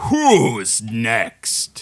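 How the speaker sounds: booming, swooping, loud, carrying bellow. A figure in a box stands before a cheering crowd; bellowing. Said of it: "just bellows out".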